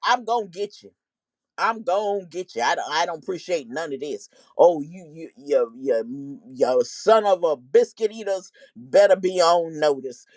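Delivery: heated, stern, threatening tone with stammering repeats. Retelling how she grabbed his tie and threatened him: imitating someone threatening. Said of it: "she was threatening him".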